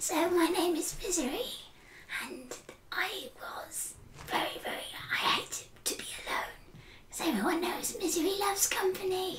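creepy, unsettling, eerie breathy whisper. Trying again an old character's voice: scary unnerving Misery voice. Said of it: "very scary and unnerving voice".

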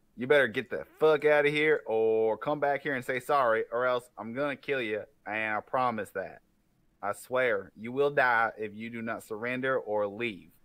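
menacing, intimidating, threatening tone. A player's character tries to intimidate an enemy into leaving: intimidating threat. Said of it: "I will attempt to an intimidation".

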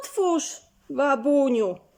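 calling out loudly. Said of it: "Zawołała".

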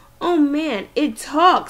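loud, high, stretched-out, drawn-out screamed jeer. A man shining a flashlight in the narrator's face yells at them: screaming. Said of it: "screamed Eddie".

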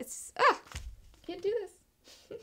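emotional, choked up, breathy, near-whispered catch. Describing a story's ending while getting emotional. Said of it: "I'm getting, like, emotional right now".

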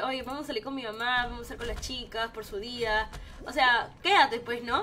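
ordinary talk

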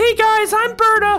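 very high, unpolished put-on character voice. Introducing a game helper who greets the viewers: Berta voice. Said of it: "voice could use work".

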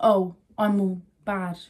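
put-on very slow, drawn-out, tough chav girl voice. Mimicking how some girls put on hard chav talk, putting on tough chav-girl talk. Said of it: "They put it on like".

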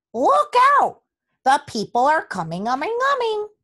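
shrill, sing-song, very high, loud swooping shout. The gander alerts the other barnyard animals; shouted. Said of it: "shouted the gander".

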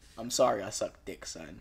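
sorry-sounding father voice. Imagining a dad coming up to his son: imitating a dad apologizing. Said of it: "Imagine your dad coming up to you".

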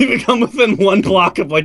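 laughing so hard through the words. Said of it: "Which is why I'm laughing so".

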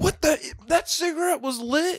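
mock furious outburst, pitched way up. Retelling how a man got mad at a cashier, imitating his angry outburst. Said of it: "he got so mad at the cashier".

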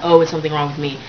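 ordinary talk

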